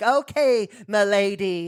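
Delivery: high, cringy nerdy voice. Retelling a nerd competition contestant's line: imitating a nerdy contestant. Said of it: "he talks like this".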